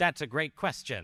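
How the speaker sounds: cheerful AI voice. Speaker mimics an AI answering a user's question, in a cheerful AI assistant voice. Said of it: "like the cheerful A I voice".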